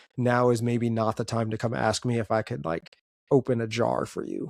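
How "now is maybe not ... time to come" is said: usual speaking voice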